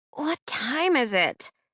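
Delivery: slow groggy groan. Reading a story aloud, a character just woken up: groaning. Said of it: "Clover groaned".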